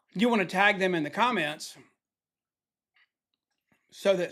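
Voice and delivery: chewing while talking, mouth full of almonds. Live host greeting viewers by name, talking while eating almonds. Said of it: "sorry, I was eating some almonds".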